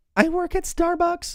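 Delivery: put-on very high-pitched young teen kid voice. Retelling a young caller's answer, imitating a kid's high-pitched voice. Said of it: "He had like a very high pitched voice".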